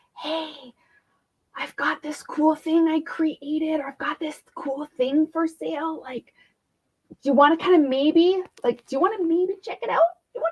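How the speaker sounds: mock hesitant whisper. Acting out someone quietly mentioning a thing they made: imitating a hesitant whisper. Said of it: "like whispering".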